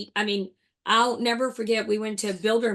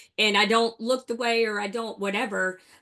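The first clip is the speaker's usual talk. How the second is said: usual speaking voice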